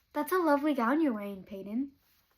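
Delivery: acted snide, taunting, mocking, sarcastic tone. Video maker deliberately saying a line to Peyton, in a mocking tone. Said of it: "this is said in a mocking tone".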